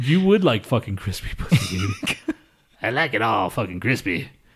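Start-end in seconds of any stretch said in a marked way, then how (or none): 2.8-4.3 put-on Cajun accent, old-timer style, sudden. Repeating a joke about a company name, in a sudden old Cajun accent. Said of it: "What was that accent?".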